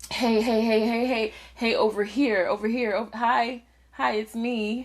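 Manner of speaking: play-acted, manipulative, attention-seeking calling tone. Retelling how someone else acts: imitating someone acting manipulative. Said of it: "It comes across as".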